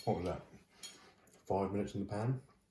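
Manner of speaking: talking with mouth full, chewing. Tasting freshly cooked herring, talking with mouth full. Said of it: "Probably shouldn't talk with my mouth open".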